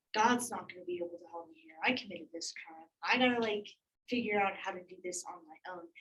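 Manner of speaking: normal talking voice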